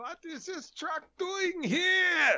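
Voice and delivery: put-on German accent, pitched very high, stretched out. Driver describing how he acts behind the wheel, doing a Major Hochstetter impression. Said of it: "I go back into the Hogan's Heroes accent".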